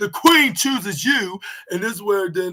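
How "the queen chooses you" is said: put-on loud, ringing, clear-cut royal announcer voice. Retelling how she announced her WrestleMania pick before dropping the microphone; retelling a loud, clear declaration. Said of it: "with a very clear, loud voice".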